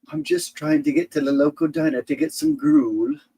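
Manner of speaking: put-on English accent, very high and swooping. Speaker acts out a bit as an english driver, english accent. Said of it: "you start talking with your English accent".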